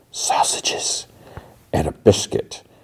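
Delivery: slow, hushed whisper under the breath. Retelling a man ordering breakfast, whispering the rest of his order. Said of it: "and he whispers".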